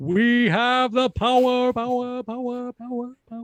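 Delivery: human reverb, word repeated. Joking with a co-host, adding a fake echo with the voice: vocal reverb echo. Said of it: "Was I good reverber?".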